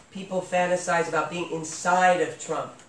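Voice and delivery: normal talking voice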